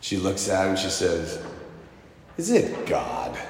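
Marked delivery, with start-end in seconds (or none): 2.4-3.4 doubtful, skeptical and sneering. Retelling a rich woman's reply to a happy gym worker: imitating her skeptical voice. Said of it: "in that voice".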